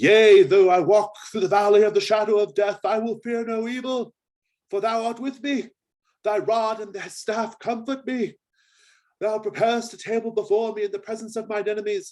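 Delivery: loud, booming, very high-pitched calling out. Narrator voicing the abbot calling out among brothers writhing on the ground, booming voice. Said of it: "calling out in his booming voice".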